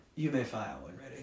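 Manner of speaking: very quiet, understated, sinister delivery. Retelling a villain's order from a war movie: very quiet delivery. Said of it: "He does the very quiet".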